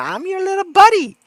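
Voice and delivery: loud, high, squeaky puppet voice. Telling someone not to say buddy like Elmo, then doing the Elmo voice. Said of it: "Don't say buddy like Elmo".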